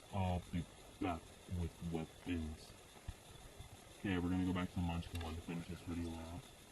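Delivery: deep, heavy put-on voice dropped low. The last part of a video skit, done in the deep voice. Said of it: "Last part is called the deep voice".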